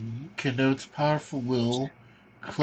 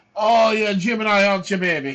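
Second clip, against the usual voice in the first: put-on Jamaican psychic accent, pitched higher; 6 semitones higher, 6 dB louder than usual. Starting a card reading for the stream, in a Miss Cleo voice. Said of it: "Please do it in the Miss Cleo voice".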